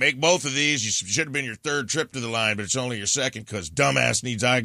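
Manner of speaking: put-on passive-aggressive voice. Recalling being yelled at through to the refs at the free throw line, imitating a passive-aggressive yell. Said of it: "yelling at the refs through talking to me, like in a passive aggressive way".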